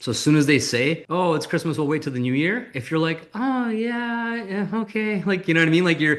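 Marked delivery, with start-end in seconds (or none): 3.3-5.2 play-acted defeated, resigned voice, very slow, pitched up. Replying to someone who says they'll wait till the new year: defeated tone. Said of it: "you're basically like defeated".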